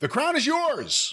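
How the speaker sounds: shrill, very high, loud yelling. Closing a sponsor read on the show, yelling. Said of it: "and I'm yelling again".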